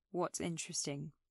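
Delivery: bored, flat, soft monotone, no interest at all. The narrator asks back what's interesting, in a flat, uninterested voice. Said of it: "I don't think I could sound less interested".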